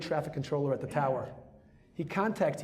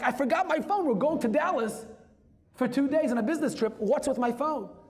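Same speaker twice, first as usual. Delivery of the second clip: alarmed, panicked, frantic outburst; 9 semitones higher, 4 dB louder than usual. Retelling what a passenger on a plane said: imitating a panicked passenger. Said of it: "He was panicking".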